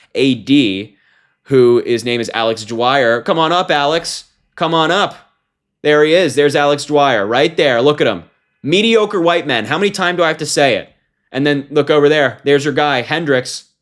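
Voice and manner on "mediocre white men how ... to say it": angry, fed-up rant with raised pitch. Speaker pointing out men in a photo, sick of dealing with Republicans: angry. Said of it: "I'm pissed off right now".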